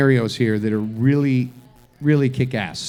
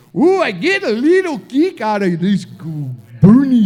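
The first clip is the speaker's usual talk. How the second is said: poor fake Swedish accent, high and sing-song; 8 semitones higher, 4 dB louder than usual. Retelling what a man said during a talk about politics, bad swedish accent. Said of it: "That's not a good Swedish accent".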